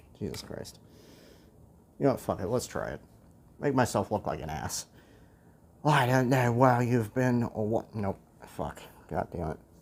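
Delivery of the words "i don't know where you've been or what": botched, clumsy put-on Scottish accent. Reading a character's line aloud: attempted Scottish accent. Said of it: "I can't do a Scottish accent".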